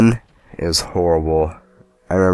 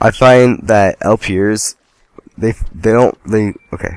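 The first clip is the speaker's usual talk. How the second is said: stuttering, stammering speech; 3 semitones higher than usual. Speaker introduces a new topic in an optional room, stuttering. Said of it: "Sorry, I stutter so much".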